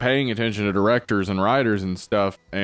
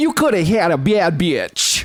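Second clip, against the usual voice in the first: put-on Minnesota lady voice, higher and louder; 9 semitones higher, 5 dB louder than usual. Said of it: "Is that your [name] impression?".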